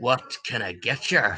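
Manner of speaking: gruff, low, slow barkeep-style growl. Voicing a barkeep asking the guests for orders: growling barkeep voice. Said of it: "and in a growl".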